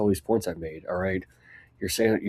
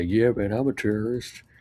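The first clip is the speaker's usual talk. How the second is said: mock slow, tongue-in-cheek, sarcastic drawl. Reading out a comment that quotes a remark: imitating a sarcastic remark. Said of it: "you sarcastically say".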